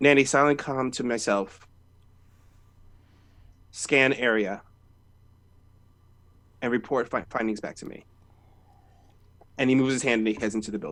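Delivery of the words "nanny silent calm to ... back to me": quiet, muttered under the breath to oneself. Voicing a character who touches a fence and gives an order: said under his breath. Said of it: "he says under his breath".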